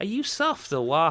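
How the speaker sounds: high, sketch-comedy-style Liverpool Scouse accent. Trying to get the accent right, the speaker does a Harry Enfield Scouser accent. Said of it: "So I'm saying".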